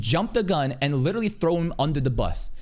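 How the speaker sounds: plain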